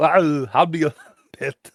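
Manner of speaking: put-on Austrian voice. Trying out a voice for a story line: put-on Austrian accent. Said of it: "so the Austrian voice".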